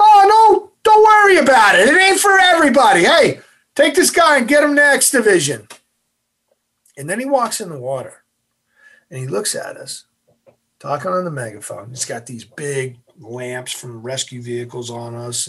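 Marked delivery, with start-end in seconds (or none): 0.0-5.7 very high, loud, bouncy, cheerful reassuring voice. Retelling an instructor's sudden change when a trainee quits, imitating Instructor Boston cheerfully. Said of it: "turns into like a happy guy".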